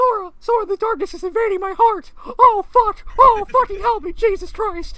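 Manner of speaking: very high, very loud, drawn-out cartoon voice. Doing a character's line about darkness: Mickey Mouse voice. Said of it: "let me see if I can pull out my Mickey voice for this".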